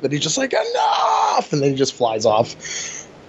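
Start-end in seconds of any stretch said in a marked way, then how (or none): 0.5-1.5 very high-pitched, pissed-off, angry outburst. Retelling Vegeta being bumped by a crowd: imitating angry Vegeta. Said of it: "And he got pissed off".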